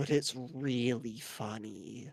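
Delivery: whispering voice. Playing a character who leans into Nordy's ear: whispering in someone's ear. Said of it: "lean in Nordy's ear and whisper".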